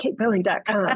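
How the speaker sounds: American accent in an ad voiceover style. Announcing the speaker's own website name, American accent. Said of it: "I always feel like I need to say that in an American accent".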